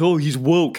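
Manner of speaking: put-on dumb mocking voice. Listing traits of being woke, saying the word in that voice: put-on dumb mocking voice. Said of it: "without putting on that dumb voice".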